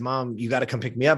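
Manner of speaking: normal talking voice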